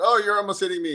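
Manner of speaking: play-acted indignant angry cry, pitched very high. Retelling how a stranger complained in a parking lot: imitating someone getting mad. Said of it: "and got all mad".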